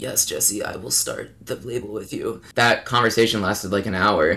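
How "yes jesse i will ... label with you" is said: weak, breathy whisper, barely able to talk. Retelling agreeing to start a label while feeling like death: imitating barely being able to talk. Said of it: "me barely being able to talk".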